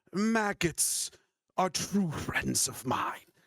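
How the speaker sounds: put-on witch character voice. Voicing the Rust Witch as she speaks to the players: Rust Witch voice. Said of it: "she goes".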